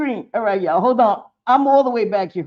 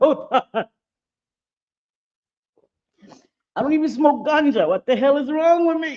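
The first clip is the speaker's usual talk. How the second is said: laughing and giggling while talking, much higher pitch; 3 semitones higher than usual. Livestreamer trying to respond to Shelly, laughing while talking. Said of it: "Stop laughing".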